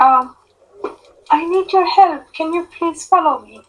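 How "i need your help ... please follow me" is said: speaking as a woman, high. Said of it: "do you want me to talk as a woman".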